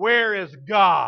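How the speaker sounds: big, loud, booming preacher voice, demanding tone. Telling a story, the speaker quotes a minister questioning a little boy: booming voice. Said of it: "said with this booming voice".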